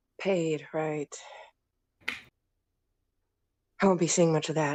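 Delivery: low grumble muttered quietly under the breath. A hired fighter, after asking about the pay, muttered under breath. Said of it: "He kind of mutters that under his breath".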